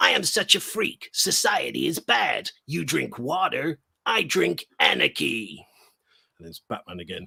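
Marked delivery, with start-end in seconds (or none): 0.0-5.6 slow, rough, drawn-out made-up clown villain voice. Speaker takes on the Joker while telling an AI story, made-up Joker voice. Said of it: "I'm making up a Joker voice".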